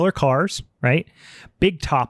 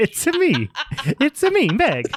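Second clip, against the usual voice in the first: very high, swooping sing-song voice; 12 semitones higher than usual. Teasing a friend with a joke voice: Mario voice. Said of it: "She's turned into fucking Mario".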